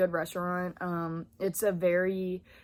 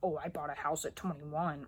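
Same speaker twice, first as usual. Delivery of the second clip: showy, self-satisfied, boastful bragging tone; 4 semitones lower, 7 dB quieter than usual. Explaining why the video feels weird to make: mock bragging. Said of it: "me bragging".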